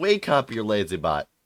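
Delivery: mild holler. Retelling a man knocking on Marza's door, retelling a holler.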